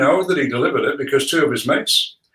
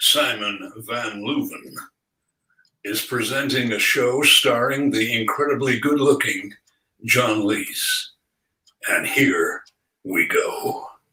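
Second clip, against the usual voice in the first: deep, commanding movie-trailer announcer voice; 4 semitones lower, 4 dB quieter than usual. Asked on the spot for a show intro, movie-trailer announcer voice. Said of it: "an intro for our show in the cinematic guy's voice".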